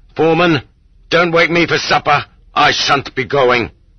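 high, hard, steely, angry cry. Reading a novel, a man turns from the beggars and tells the foreman, angry, steely voice. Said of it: "cried in an angry, steely voice".

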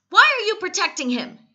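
very high, very loud, furious, shrill. The young master questions the woman protecting the animal; demanding. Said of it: "he demanded".

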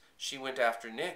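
usual speaking voice

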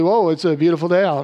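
joking, tongue-in-cheek, sarcastic cheerful tone. Showing how to joke about cold rain at home: joking sarcastic tone. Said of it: "you can jokingly say it sarcastically".

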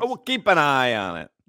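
exaggerated cartoon video-game Italian accent. Trading a repeated joke line with another speaker, talking like the Mario Brothers. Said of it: "we're talking like the Mario Brothers".

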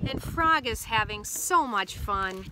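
plain reading voice

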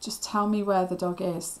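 plain reading voice

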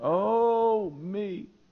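acted, very high, long, loud moan on "oh". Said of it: "that characteristic long moan".

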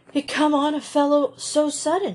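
sheepish, ashamed, shamefaced, pitched a bit high. After Cecily speaks, Peter answers the others shamefacedly. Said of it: "said Peter shamefacedly".

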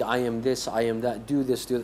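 usual speaking voice

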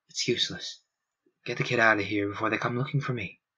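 deadpan, dry, flat, level, expressionless delivery. A character walks to the window and speaks to the others; deadpan. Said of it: "said in his deadpan voice".

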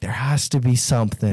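plain

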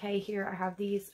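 plain

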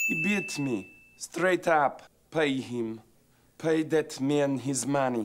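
terrible put-on Russian accent, loud and high. Acting a scene at a poker game: terrible Russian accent. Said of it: "The Russian accent is terrible".

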